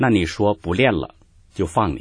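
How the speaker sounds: ordinary talk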